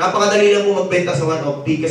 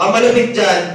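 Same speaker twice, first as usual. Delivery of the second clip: ordinary talk, nothing marked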